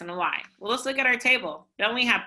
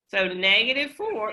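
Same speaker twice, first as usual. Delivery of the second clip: voice breaking mid-phrase. Solving an equation aloud step by step, with a voice crack. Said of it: "voice crack".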